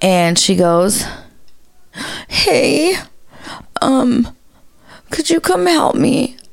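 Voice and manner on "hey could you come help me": trembling, very high, slow, shaky voice. Retelling what a client said to the speaker, imitating a client's shaky voice. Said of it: "I hear shakiness in her voice".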